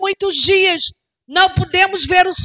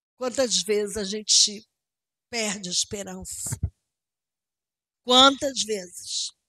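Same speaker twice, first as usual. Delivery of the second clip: very soft, very quiet voice, overcome with emotion; 10 semitones lower, 13 dB quieter than usual. Addressing the brothers, pausing to apologize: emotional, moved. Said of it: "desculpa, eu tô emocionada".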